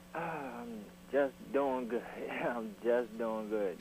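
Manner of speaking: down, dispirited, depressed low-energy delivery. A radio caller greets the host, sounding depressed. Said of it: "you sound depressed here this morning".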